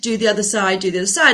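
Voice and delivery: plain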